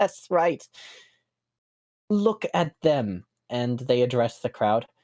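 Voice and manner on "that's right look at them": smug, self-satisfied, pitched-up gloating wizard voice. Voicing a wizard in a stage play, smiling at the booing crowd: smug wizard voice. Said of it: "the wizard, like, smiles smugly".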